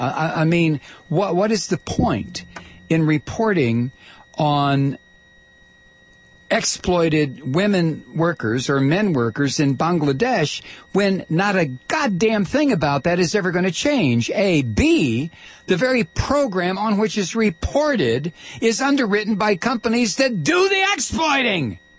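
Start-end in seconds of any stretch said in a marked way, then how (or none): 10.9-21.8 high-pitched, heated yelling. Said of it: "I'm sorry, I'm yelling".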